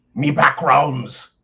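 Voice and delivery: very loud, high-pitched pirate voice. Repeating another speaker's odd phrase back at him, in a pirate voice. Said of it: "why are we talking like a pirate".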